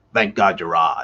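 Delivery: low, deep, eerie, unsettling creepy voice. Reading a greeting aloud, doing John Diller's deep, creepy voice. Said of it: "He has like a deep, kind of creepy voice".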